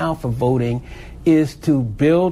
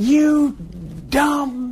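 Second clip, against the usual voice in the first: loud yelling and shrieking. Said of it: "started screaming and hollering".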